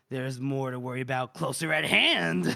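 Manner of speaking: ominous, sinister, menacing, threatening voice. Retelling a story's scene where Greg speaks: sinister voice. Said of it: "Greg is all sinister".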